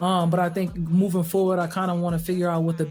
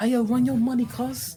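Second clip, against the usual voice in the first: put-on English gangster-movie accent; 6 semitones higher than usual. Imitating gangsters in movies who speak with an English accent: imitating gangster with English accent.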